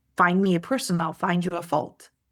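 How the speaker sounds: ordinary delivery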